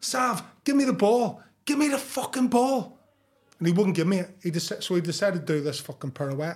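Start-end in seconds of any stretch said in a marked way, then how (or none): 0.0-3.0 shrill, very high, demanding scream. Retelling screaming at Sav to pass him the ball: retelling his own screaming. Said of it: "So I'm screaming at him".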